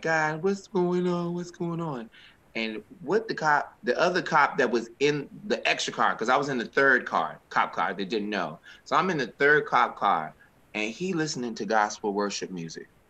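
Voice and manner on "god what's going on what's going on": acted, high-pitched, tearful crying voice. Retelling sitting handcuffed in a police car: imitating own past crying. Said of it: "I'm sitting there crying".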